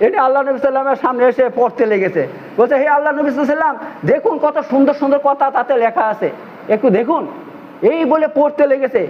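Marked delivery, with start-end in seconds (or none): none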